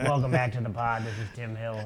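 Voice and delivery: put-on host-style voice, robot-like. Opening the podcast while imitating the co-host's voice: imitating Tim Hill. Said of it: "the go-to impression for your voice".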